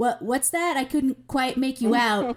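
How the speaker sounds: broken-up walkie radio voice, cutting in and out. Voicing a guard who fakes a broken walkie: faking a broken-up walkie voice. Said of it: "so it sounds like he's breaking up and going like".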